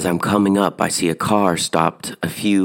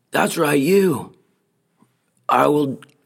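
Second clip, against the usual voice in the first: put-on angry, cussing voice, much higher pitch; 9 semitones higher than usual. Retelling a roadside clash with a young guy; imitating an angry cussing guy. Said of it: "And he's cussing at me".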